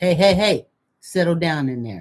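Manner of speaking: firm, stern mommy voice. Telling listeners how to straighten rowdy kids up, demonstrating the mommy voice. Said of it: "then you got to use the mommy voice".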